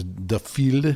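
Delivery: slow, bad French accent. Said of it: "that's a terrible French accent".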